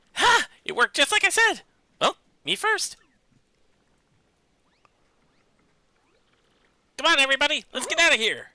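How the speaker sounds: very high-pitched cartoon voice. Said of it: "I hear the voice you're doing, and I can't help but think of Mickey Mouse".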